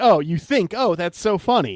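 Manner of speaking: put-on amused tone, flat, unamused, no laughter. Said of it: "you're not laughing".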